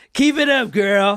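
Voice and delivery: high, loud, menacing taunting shout. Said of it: "I'll play Norris".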